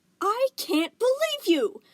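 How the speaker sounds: shrill, high-pitched, very loud screech. Narrator reads a tiny fairy-like gem reacting to another's choice, in a screechy voice. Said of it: "Aquamarine's screechy voice".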